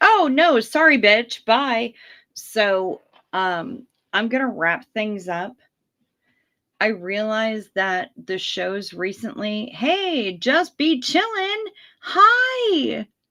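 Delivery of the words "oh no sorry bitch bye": shrill, loud put-on character voice. Worrying the battery will suddenly drop, voicing the phone battery. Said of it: "be like".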